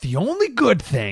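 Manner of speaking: put-on dramatic angry voice. Dramatically reading aloud a stranger's online comment: imitating an angry commenter, dramatic. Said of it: "let me do a dramatic".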